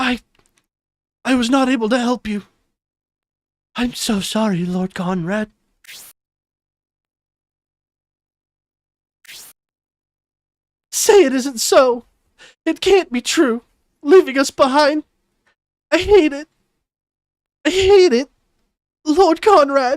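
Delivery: crying in an acted voice. Reading a game character's lines to Lord Conrad aloud, crying while voice acting. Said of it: "my voice acting is making me cry".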